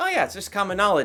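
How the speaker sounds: completely serious, matter-of-fact tone, no joking. Retelling a movie scene with a straight face: Tommy Lee Jones straight face. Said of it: "with such a s-, straight face".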